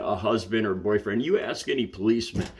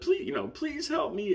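woman's voice, very high-pitched; 5 dB quieter than usual. Retelling a stranger pleading for help: imitating a high woman's voice. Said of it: "in a high women's voice".

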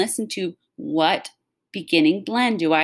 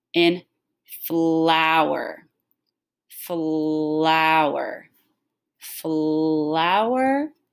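flower sounded out slow, smooth, gliding and stretched. Modeling a picture's name to hear its blend, slow and smooth. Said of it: "say it slow and smooth".

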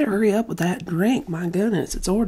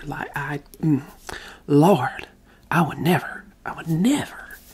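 put-on sassy Southern accent; 6 semitones lower than usual. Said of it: "sassy, southern accent ... Karen RP".

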